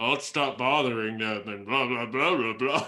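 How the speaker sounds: put-on voice muffled behind a hand. Speaking up for a companion, doing Ramos's voice. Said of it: "I do Ramos's voice and I go".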